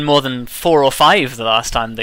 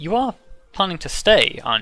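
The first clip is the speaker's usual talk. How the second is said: slightly hushed, lowered, soft voice; 3 semitones higher, 5 dB quieter than usual. After the hug, the mother turns to her child and speaks in a lowered voice. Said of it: "your mother sort of like lowers her voice a little bit".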